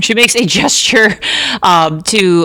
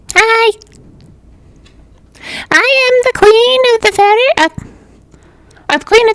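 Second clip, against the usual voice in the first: extremely high, made-up put-on character voice. Voicing her as she lands on the hand, in an extremely high-pitched voice. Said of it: "her voice is extremely high pitched".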